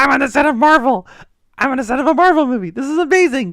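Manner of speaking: very high, loud, innocent starstruck gushing, acted out. Retelling a trailer scene on a movie set: imitating excited innocent Peter Parker. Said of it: "kinda innocent, and just like".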